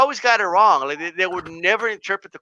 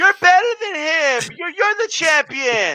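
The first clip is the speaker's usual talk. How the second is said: kind-of-high, pitched-up put-on voice; 10 semitones higher than usual. Doing an impression of someone pumping up a fighter as champion, imitating a high-pitched voice. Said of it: "kind of high".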